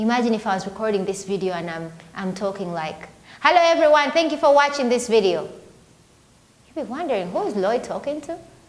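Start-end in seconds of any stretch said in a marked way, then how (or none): 3.4-5.5 loud, high outdoor voice used in a room. Recording a video, the speaker shows greeting viewers in a loud outdoor voice. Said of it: "still uses your outdoor voice".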